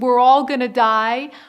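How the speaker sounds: frantic, loud, panicked scream. Illustrating two ways a captain could announce a storm: a panicked scream. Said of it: "the captain comes out and screams".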